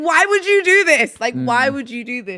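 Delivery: put-on irritated ranting. Retelling a time of confronting someone: imitating own irritated outburst. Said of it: "I was just irritated".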